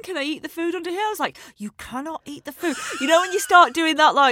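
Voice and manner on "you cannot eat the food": words forced through clenched, gritted teeth. Retelling what she told her child under a restaurant table, talking through teeth. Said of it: "talking through your teeth".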